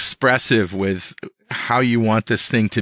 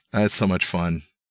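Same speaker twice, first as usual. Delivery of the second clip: usual speaking voice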